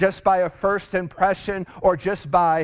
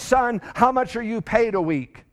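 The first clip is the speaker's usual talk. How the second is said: put-on, very angry, furious delivery; 3 semitones higher than usual. Retelling a boss questioning a young man: imitating someone speaking very angrily. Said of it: "very angrily said".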